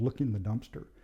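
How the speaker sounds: usual speaking voice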